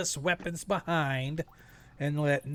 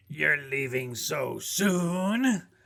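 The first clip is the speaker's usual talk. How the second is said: slow cackling voice with soon drawn out. Voicing a cackling voice that greets the arriving party: cackling voice. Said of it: "you hear this voice sort of cackling".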